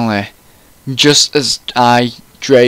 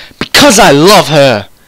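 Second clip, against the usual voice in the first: loud, shrieking cry; 4 semitones higher, 6 dB louder than usual. Reading a story aloud and voicing Draco's outburst, Draco shrieking. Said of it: "Draco shrieked".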